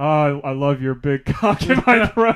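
mock-defeated, put-on woman's voice. Retelling how Jill repeated the line she was told to say: imitating Jill's defeated tone. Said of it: "she just says like very defeated".

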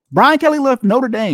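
shouting. Speaker announcing news to listeners, yelling. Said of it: "Excuse me for yelling".

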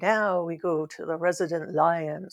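put-on thick Jamaican accent. Recalling how he always introduced the station IDs: heavy Jamaican accent. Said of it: "he had a very heavy Jamaican accent".

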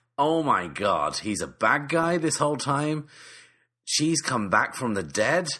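shocked yelling, high and loud. Retelling watching a show's twists: imitating screaming at the TV. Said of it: "Screaming at the T V".

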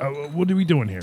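exasperated, fed-up voice at the end of patience. Voicing a character staring at the stairs and asking what they're doing: exasperated. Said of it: "looking exasperated at the stairs".

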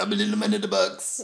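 very high, creaky novelty voice. Doing the little man in the box voice for a photo. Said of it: "take a photo of you doing it".

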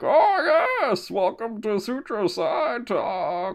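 soft masked villain voice. Joking about dressing as Bane in a scream mask, doing a Bane voice. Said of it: "do Bane with a scream mask and be like".

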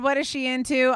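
plain

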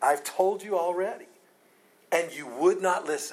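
put-on exasperated tone. Acting out the healed man answering his questioners: irritated, frustrated retort. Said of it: "He's irritated. He's frustrated".

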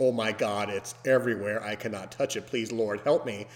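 ordinary delivery

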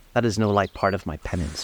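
plain reading voice

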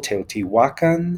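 Teotihuacan with the penultimate syllable hua stressed. Correcting spelling-based pronunciations, stress on second-to-last syllable of teotihuacan. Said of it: "the emphasis ought to be on the second to last syllable".

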